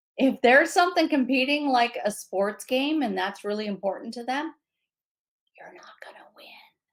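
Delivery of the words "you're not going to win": soft, hushed whisper, barely voiced. Giving advice about getting someone's attention, the speaker tells the listener this whispering. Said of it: "I'm telling you that in a whisper".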